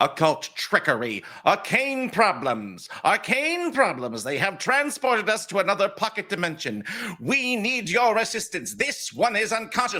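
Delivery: very high, many-voiced buzzing bee swarm shout. Voicing a player's bees bursting from a character's mouth: buzzing swarm voice shouting. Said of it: "buzzing, multitudinous voice shouting".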